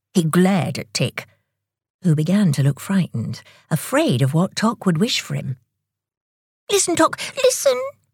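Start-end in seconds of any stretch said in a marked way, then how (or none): 6.7-7.8 hurried, quick, very high-pitched delivery. Under the other's glare, he urges him to listen, said quickly. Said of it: "he said quickly".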